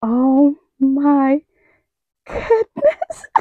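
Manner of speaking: very slow, thrilled, swooping, drawn-out gushing. Showing a new bag to viewers: excited. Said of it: "I don't want to get excited right now".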